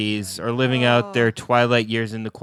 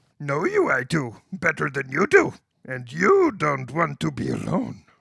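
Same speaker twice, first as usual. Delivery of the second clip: creaky character voice with swooping pitch; 4 semitones higher than usual. Repeating a line just heard, now in the voice of Yoda. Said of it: "Can I do that line in the voice of Yoda?".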